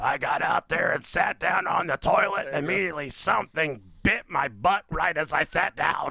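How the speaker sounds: put-on smoker's voice. Reading a woman's quote from a news story, in a smoker's voice as Shannon Stevens. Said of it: "You gotta have a smoker's voice".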